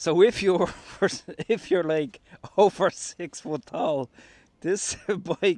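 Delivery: laughing and giggling through words. Showing a tall handlebar extension on camera, laughing while talking. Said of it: "I can't stop laughing".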